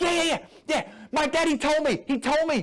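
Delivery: rattled-off, fast, high-pitched excited gushing. Narrator reading the narrator-character's reply to Billy, talking really fast, excited. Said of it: "talking really fast because I'm really excited".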